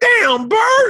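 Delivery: very high, strained, squeezed-up put-on voice. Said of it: "I do his voice".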